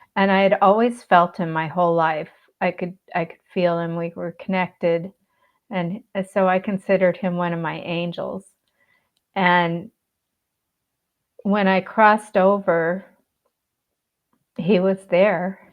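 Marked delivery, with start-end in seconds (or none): 9.4-15.6 slow, moved voice, heavy with feeling. Sharing a personal story that is still emotional to tell, emotional. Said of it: "sorry, it's still emotional".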